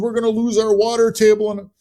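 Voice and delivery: play-acted, high yelling at the top of the lungs. Retelling someone at a local event about data centers, retelling a top-of-lungs yell. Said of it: "somebody's yelling at the top of their lungs".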